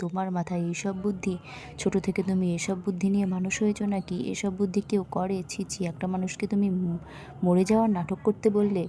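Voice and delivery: ordinary talk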